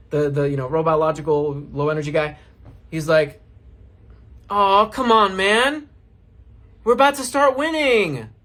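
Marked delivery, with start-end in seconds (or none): 4.5-8.2 high, needy, begging, pleading voice. Retelling what a low-energy guy said while loading into a match, mock-needy voice. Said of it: "You hear the neediness in my voice?".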